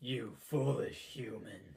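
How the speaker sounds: voice dropped way down, deep and low. Voicing what he says, translated, in a deep voice. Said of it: "in this deep voice".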